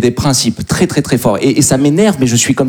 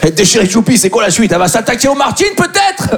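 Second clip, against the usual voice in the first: high, rising, outraged rant. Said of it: "t'as l'air d'un dingue".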